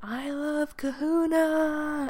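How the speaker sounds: top-of-the-lungs, loud, high scream, "kahuna" drawn out. Recalling lying drunk on the kitchen floor, re-enacting a full-lung scream. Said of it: "just screaming".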